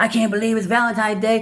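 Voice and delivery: annoyed griping. Retelling a girlfriend's reaction on valentine's day, imitating an angry girlfriend. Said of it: "is now all pissed off".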